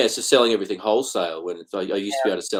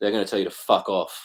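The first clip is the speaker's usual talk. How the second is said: ordinary delivery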